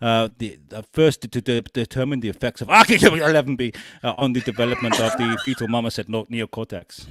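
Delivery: speaking with German accent.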